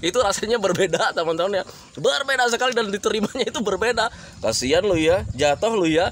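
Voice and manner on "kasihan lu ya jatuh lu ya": needling, jeering, mocking, teasing tone. Explaining intonation to friends, showing a mocking tone. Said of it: "itu nadanya jadi meledek".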